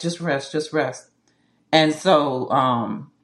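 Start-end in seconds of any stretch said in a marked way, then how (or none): 0.0-1.1 put-on tearful speech, quieter. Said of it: "he was crying and he was like".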